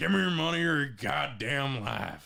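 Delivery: put-on Old West bandit voice. After friends praise his voices, speaking in a western voice. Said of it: "in a in a Western voice".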